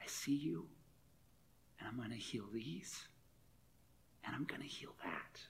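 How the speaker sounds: tender, gentle, very quiet whisper. Retelling what was said to a man who can't hear, acting out tender speech. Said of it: "tenderly says".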